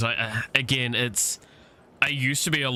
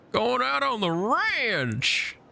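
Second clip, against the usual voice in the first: fake Southern American accent, very high, swooping; 13 semitones higher than usual. Trying out accents off the top of one's head: fake southern accent. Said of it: "like fake Southern accents".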